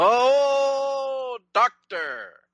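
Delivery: very high exclamation with a long drawn-out oh. Reacting to a joke from another speaker: Keith Jackson impression. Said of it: "Was that your Keith Jackson impression?".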